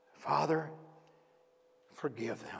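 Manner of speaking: acted weak, strained voice. Retelling what a man said looking out at the crowd, acting a weak, strained voice. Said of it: "In a weak, strained voice".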